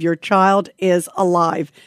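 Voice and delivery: normal talking voice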